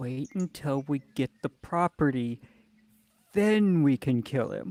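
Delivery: whispering in a character voice. Whispering to Bagrag in character about waiting for the property: whispering in character. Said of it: "I'd like to just kind of whisper to Bagrag".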